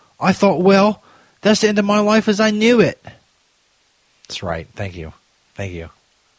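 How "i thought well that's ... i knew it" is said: put-on British accent, pitched up. Retelling a quote from a tattoo show: British accent impression. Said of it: "My dope British impression".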